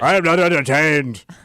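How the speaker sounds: put-on ancient Roman voice. Speaker copies a line in the voice of the Roman. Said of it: "And you did the voice from, like, the Roman".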